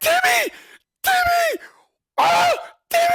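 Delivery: very high, very loud, stretched-out, drawn-out screaming yells. Retelling cheering at a hockey game: retelling screaming a name. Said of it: "I'm just screaming his fucking name".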